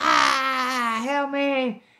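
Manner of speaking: acted high, loud scream with a long ah. Retelling the moment the speaker's leg was hanging off, retelling a scream. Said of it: "I start screaming".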